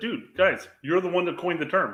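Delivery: ordinary delivery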